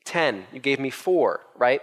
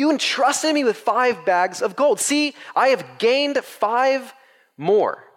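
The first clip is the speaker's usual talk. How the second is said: mock eager servant voice, excited, pitched-up, proud; 8 semitones higher than usual. Retelling a servant reporting his gains to the master: acting out an excited servant. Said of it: "can almost hear the excitement in his voice".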